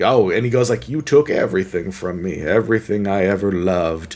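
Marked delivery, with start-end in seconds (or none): 0.9-4.2 mock sandpaper-dry, dead flat, level villain delivery. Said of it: "delivering in the most sandpaper dry tone ever".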